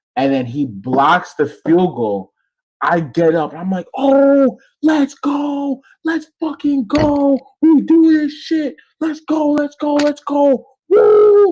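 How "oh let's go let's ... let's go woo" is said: very high, full-throated, top-of-the-lungs screaming. Retelling celebrating a blocked field goal, retelling screaming at top of lungs. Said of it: "I'm screaming at the top of my lungs".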